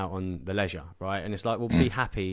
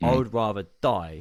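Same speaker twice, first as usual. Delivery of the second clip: angry, almost spitting the words out; 4 dB louder than usual. Retelling a mentor's reply to a warning about sleep: imitating an angry retort. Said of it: "angrily, like, almost spat at me".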